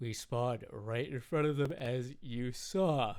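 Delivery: mid-yawn speech, yawning while talking. Player commenting on a game round, yawning while talking. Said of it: "I'm yawning as I speak".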